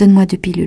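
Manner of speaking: ordinary talk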